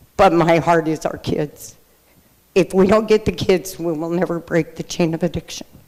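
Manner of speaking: emotional, moved, heartfelt, rushed delivery. Speaker urging a youth program in northern california, getting emotional. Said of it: "I'm sorry I get emotional about this part".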